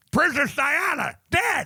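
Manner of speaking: high, mushy, gummy, toothless speech. Retelling how the grandfather announced news: imitating grandfather with teeth out. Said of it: "when you take your teeth out".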